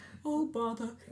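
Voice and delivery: voice of a cartoon bear. Showing the voice that Jim Cummings does: Winnie the Pooh voice. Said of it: "Wait, like, the voice?".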